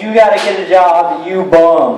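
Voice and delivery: ordinary talk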